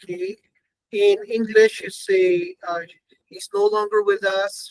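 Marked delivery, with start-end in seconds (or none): none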